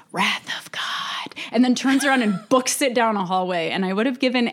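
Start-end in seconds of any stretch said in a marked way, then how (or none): 0.1-1.3 hushed, breathy whisper under the breath. Retelling how Gideon repeats the phrase before running off down a hallway: retelling a whisper. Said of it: "He just whispers".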